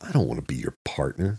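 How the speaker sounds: voice thick with open disgust. Answering another man's suggestion, he speaks with disgust. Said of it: "Jack said with disgust".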